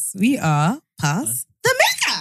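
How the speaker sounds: very slow, swooping, rising sing-song intro voice. Introducing the podcast after being told to do the voice: high-pitched intro voice. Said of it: "You have to do it in the voice".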